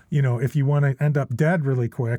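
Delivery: ordinary delivery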